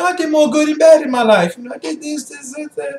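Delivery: mocking, very high-pitched sarcastic tone. Acting out a reply to God about one's own good deeds: put-on sarcastic tone. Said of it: "I'm saying sarcastically".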